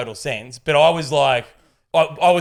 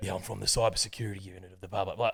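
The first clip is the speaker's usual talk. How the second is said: full, heavily laid-on put-on London accent; 7 semitones lower, 13 dB quieter than usual. Retelling what the scam caller said: imitating a London accent. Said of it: "full London accent".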